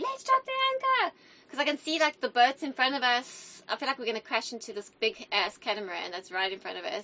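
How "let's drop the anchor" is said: high, shrill, full-volume screaming shout. Telling a boat story, acting out their past self at the front: retelling a scream. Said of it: "And I'm screaming in the front".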